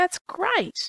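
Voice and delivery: very high, very cheerful, delighted, bright tone. Showing an example of a son's reply to a vacation plan: very cheerful tone. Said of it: "The tone of son's response is very cheerful".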